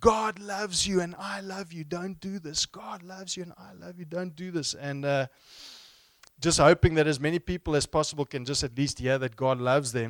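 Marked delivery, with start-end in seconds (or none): 0.0-4.7 put-on earnest urgent tone, shouted at top of lungs. Retelling holding on in the fridge, retelling a shout at top of lungs. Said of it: "I'm shouting at the top of my lungs".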